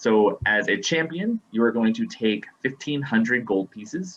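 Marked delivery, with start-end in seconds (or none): none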